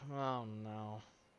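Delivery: low, muttered murmur under the breath. Narrating a man looking skyward through his spyglass, murmuring to himself. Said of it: "and then murmurs to himself".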